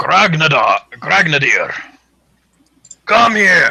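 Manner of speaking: booming, loud bellow with mouth stuffed full. Game master voices a huge figure calling out over the music: bellowing with mouth full of meat. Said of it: "it's still got like a mouthful of meat, ... bellows out".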